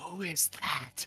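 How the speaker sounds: very high, audible whisper. Jasper leans over to Alexander and asks in a very high whisper. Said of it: "in a very high, whispering voice".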